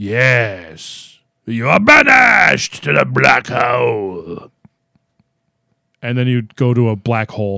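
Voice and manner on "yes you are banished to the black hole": put-on slow, creepy old Scottish voice, yes stretched out. Recalling a TV dice game, the hooded Gatekeeper banishes a player: creepy old Scottish Gatekeeper voice.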